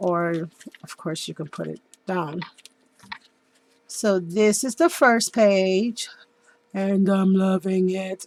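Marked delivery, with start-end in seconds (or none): 6.7-8.3 slow, spooky, menacing, scary voice. Showing the first page of a handmade mini album: scary voice. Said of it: "that was my scary voice".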